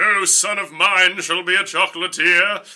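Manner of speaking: very slow, deliberate, word-by-word pronouncement. Retelling a movie scene, quoting the father as Christopher Lee. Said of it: "That's pretty good".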